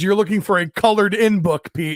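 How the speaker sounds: plain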